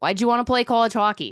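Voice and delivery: loud, performed, put-on Boston accent. Performing a film scene for others to rate, put-on Boston accent. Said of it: "rate my Boston accent".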